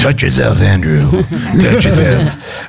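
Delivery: monster creature voice with pitch swinging about. Retelling the first words spoken when the character's voice was born, Hormone Monster voice. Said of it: "the voice of the hormone monster".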